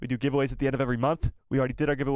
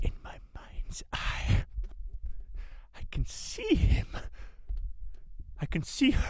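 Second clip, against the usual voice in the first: very slow, breathy whisper, every word dragged out; 11 semitones higher, 5 dB quieter than usual. Trying out a best Maul impression for the chat: Maul voice. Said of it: "my best Maul impression".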